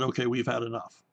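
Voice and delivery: ordinary talk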